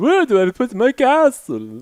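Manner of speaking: slow, drawn-out, swooping put-on vampire voice. Redoing what someone said as a vampire impression, vampire voice. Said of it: "like a vampire impression of it".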